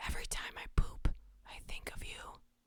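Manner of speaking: hushed ASMR-style delivery. Reading out the next line from a list, in an ASMR voice. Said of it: "A S M R for the horrible".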